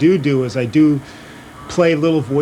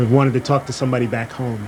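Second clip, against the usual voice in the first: normal talking voice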